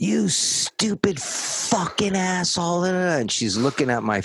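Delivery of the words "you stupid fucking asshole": high, shrill, abusive screaming. Recounting a woman screaming at a man, retelling her screaming. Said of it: "she's screaming at him".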